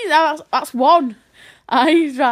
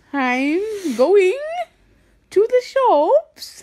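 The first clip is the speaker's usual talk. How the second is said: accent that sounds Eastern European; 3 semitones higher than usual. Players take turns saying a line in an accent: Eastern European-sounding accent. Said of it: "You sound like Eastern European".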